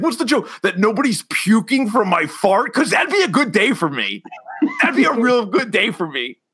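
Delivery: unhinged rant, high and swooping, pitch climbing. Retelling a comedy sketch scene where the character explodes, imitating Tim Robinson losing his mind. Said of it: "he fucking loses his mind".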